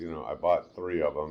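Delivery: ordinary delivery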